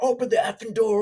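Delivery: loud, high-pitched cursing scream. Speaker retells an armed man at the door cussing at a woman, imitating someone screaming. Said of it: "he's screaming, cussing at her".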